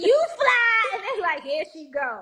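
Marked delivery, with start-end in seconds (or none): 0.0-0.9 very high, squeaky put-on bird voice. Describing hyping up a partner, doing a bird voice. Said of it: "And I do my bird voice".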